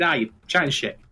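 usual speaking voice

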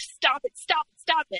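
acted screaming. Recalling hitting him with pillows, the speaker reenacts screaming at him, retelling a scream. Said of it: "I would scream like".

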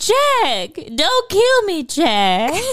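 very high, swooping put-on Southern drawl. On a podcast, quoting Shelley Duvall's lines in a Shelley Duvall Southern accent. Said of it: "her little Southern accent".

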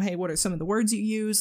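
ordinary talk

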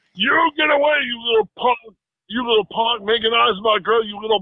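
acted-out furious, angry, hollered yelling rant. Retelling an angry confrontation on a movie set: imitating Randy Savage yelling angrily. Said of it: "he's angrily, uh, he's spinning as he talks, yelling".

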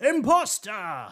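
high, accusing yell. Voicing a Santa charging into the workshop: character yelling. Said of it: "he yells".

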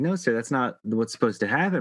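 ordinary delivery

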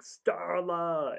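high-pitched yell. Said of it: "him yelling".

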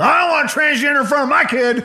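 very high, put-on, caricatured Southern accent. Parodying a person who does no research, parody Southern accent. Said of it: "sorry to parody maybe a Southern accent".

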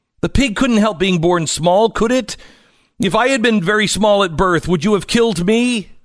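put-on high, loud, desperate childlike pleading voice.

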